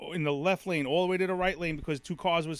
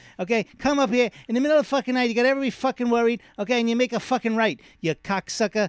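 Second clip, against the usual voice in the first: put-on angry cursing rant, higher and louder; 5 semitones higher, 5 dB louder than usual. Cursing out a hurricane for scaring everyone: Joe Pesci impression. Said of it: "Joe Pesci?".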